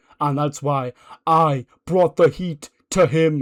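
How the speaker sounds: slow, drawn-out, preacher-style promo voice. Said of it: "And he goes".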